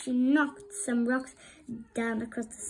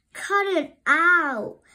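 sulky, pouting voice, raised and high; 6 semitones higher, 8 dB louder than usual. Flounder answers his laughing sister Sandy, pouting. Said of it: "Flounder pouted".

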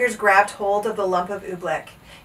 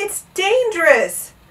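high-pitched, begging, beseeching, pleading voice; 10 semitones higher, 5 dB louder than usual. Bartholomew answers the captain of the guards, pleading. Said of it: "pleaded Bartholomew".

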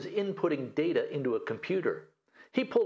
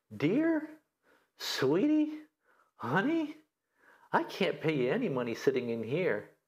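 put-on sweetest sweet-talking voice, slower. Retelling advice on what to say to the ex on the phone, in a mock sweetest voice. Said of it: "in your sweetest possible voice".

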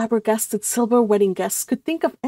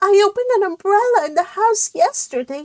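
sniffy, sniffing, much higher pitch; 10 semitones higher than usual. Narrator voicing a cousin among worried relatives: sniffing. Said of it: "sniffed Cousin Georgiana".

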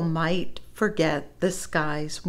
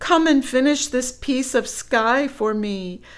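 high, loud screaming call; 7 semitones higher, 5 dB louder than usual. Narrator reads a woman screaming for her husband to come help: screaming. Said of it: "she screamed".

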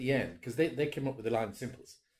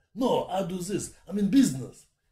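tough, loud, raised tough-guy Russian voice; 6 semitones higher, 8 dB louder than usual. Showing the voice they had in mind for a role: Russian Alan Sugar voice. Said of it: "something like this kind of voice, so he's sort of tough guy".

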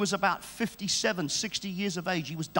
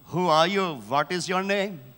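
put-on Indian-accented speech; 4 dB louder than usual. Retelling a true testimony, quoting the man in imitation of John Babu's Indian accent. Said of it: "in his inimitable Indian accent".

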